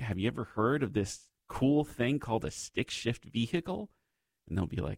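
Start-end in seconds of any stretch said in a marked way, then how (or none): none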